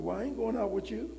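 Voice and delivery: mock-light, high, playful, joking tease. Speaker retelling what they told a man, retelling a tease. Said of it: "I'm just teasing you".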